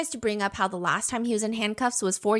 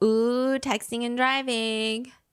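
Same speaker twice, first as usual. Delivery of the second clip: put-on teasing voice; 2 semitones higher than usual. Retelling again what the suspect said in the car: imitating a teasing voice. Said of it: "He's like".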